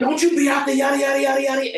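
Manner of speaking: loud, stern yell. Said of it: "and you just rah, rah".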